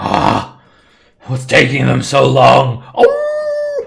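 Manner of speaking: high, loud yelling wolf voice, oh stretched. Game master voicing a winter wolf calling to another wolf: yelling wolf voice. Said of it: "the winter wolf yells to the other winter wolf".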